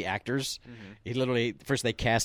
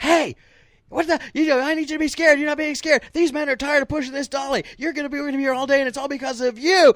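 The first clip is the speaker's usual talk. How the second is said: very high, very loud, lost-temper screaming; 10 dB louder than usual. Retelling how the director lost it and screamed at the kids, imitating Rob screaming. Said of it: "he just lost it and he screamed at him".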